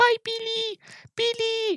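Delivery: very high-pitched, small, cute little creature voice. Describing the movie, imitating the creature's cute lines: Gizmo voice. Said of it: "doing the voice of Gizmo".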